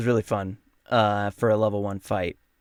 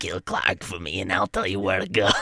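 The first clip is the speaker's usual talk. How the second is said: put-on low, old smoker voice; 4 semitones lower than usual. Trying out the planned voice for the character Ymik: sixty-year-old smoker voice. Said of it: "sixty year old smoker voice".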